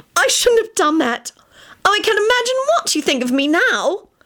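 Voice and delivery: very high squeal full of horror. Reading a story, a woman sits up after mindlessly licking something off; horrified squeal. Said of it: "she squealed in a horrified voice".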